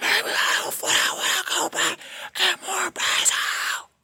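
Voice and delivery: drawn-out angry screaming, contained. Telling how a woman refused a grocery trip for more basil, retelling her angry screaming. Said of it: "She fucking started fucking screaming".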